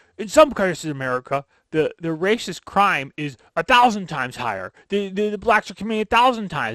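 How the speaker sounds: put-on drunken rant. Retelling how a guest came into an interview: imitating a ranting drunken uncle. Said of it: "comes in like your drunken uncle, like a bat out of hell".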